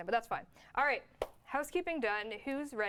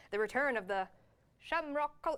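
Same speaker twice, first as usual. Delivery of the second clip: fake, poorly done, put-on Irish accent; 3 semitones higher than usual. Announcing a Saint Patty's Day event item, in a bad put-on Irish accent. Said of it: "that's a bad accent".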